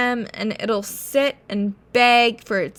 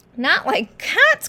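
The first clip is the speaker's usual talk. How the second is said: impassioned, piercing, shrill outburst; 7 semitones higher than usual. Reading a story aloud, voicing the mouse's cry, shrill and passionate. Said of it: "cried the mouse, in a shrill, passionate voice".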